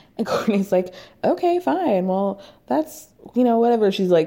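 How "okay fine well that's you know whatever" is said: mock nonchalant, cool, unbothered, playing it cool. Retelling a reply to being fired over FaceTime: imitating Kourtney playing it cool. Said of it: "playing it totally cool".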